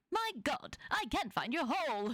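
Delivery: small, high, proper British robot voice. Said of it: "His like little like British intelligence voice".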